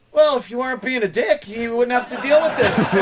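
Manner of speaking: soft-spoken, quick, sneering sarcasm. Describing how Opie reacts when they argue with someone, imitating Opie, sarcastic, soft-spoken. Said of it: "he gets so sarcastic and soft-spoken".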